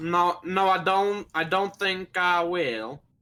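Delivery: put-on Southern accent, drifting Southern. Refusing to drop the put-on accent, the speaker now sounds Southern. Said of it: "you just sound like Southern now".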